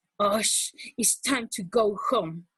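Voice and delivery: plainly angry, cross delivery. Speaker demonstrating one sentence said with different emotions: angry voice.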